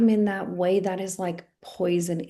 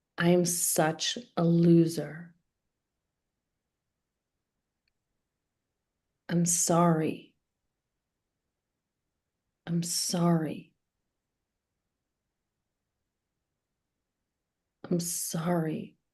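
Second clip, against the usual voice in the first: ashamed, shame-filled voice. Leading an acting exercise, saying self-talk while curled inward: ashamed self-talk. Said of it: "your body drives the shame right into the text".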